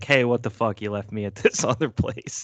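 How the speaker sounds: mock hurt, upset voice. Acting out a wrestler's line to a former partner: mock upset wrestler. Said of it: "Now I'm, like, all upset".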